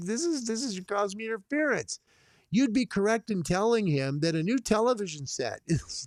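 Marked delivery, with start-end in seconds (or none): 0.0-2.0 mock-angry grumbling, much higher pitch. Retelling what an angry neighbor said, mock-angry complaint. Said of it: "He's just like".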